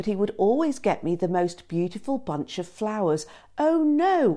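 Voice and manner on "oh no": very high, play-acted voice of false dismay. Retelling her reaction when he brings flowers despite their deal, exclaiming with false dismay. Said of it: "I would exclaim with false dismay".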